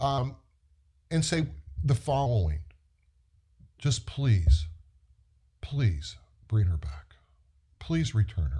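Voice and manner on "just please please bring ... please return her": mock imploring, begging, pleading tone. Quoting a county sheriff's plea in a news interview, imitating the sheriff begging. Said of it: "You don't beg the bad guy".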